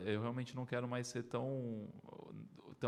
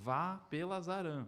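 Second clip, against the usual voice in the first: insistent, high half-yell, as if shouting; 5 semitones higher than usual. Retelling a voice that commanded a route change: imitating a voice shouting. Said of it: "aquela voz como se estivesse gritando comigo".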